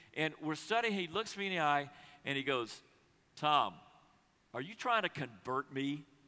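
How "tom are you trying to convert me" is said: mock edgy, menacing tone with a hard edge. Retelling a big guy's question while studying the bible together: retelling an edge in voice. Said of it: "he had an edge in his voice".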